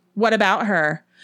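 loud, harsh, demanding tone. Ellen replies to a question from Nola, demanding harshly. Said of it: "Ellen demanded harshly".

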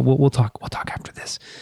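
hushed whisper. Speaking to the others on a podcast: whispering. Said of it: "Nice whisper".

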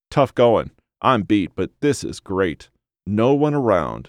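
plain reading voice

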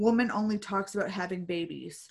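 normal talking voice

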